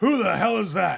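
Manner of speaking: harsh, rasping, loud, rough-edged barking voice. After a knock at the door, a voice inside demands who's there: rough voice. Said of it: "You hear this really like rough voice".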